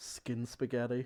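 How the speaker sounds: muttering under breath. Voicing a character in a role-play scene: mumbled under breath. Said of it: "a mumble under her breath".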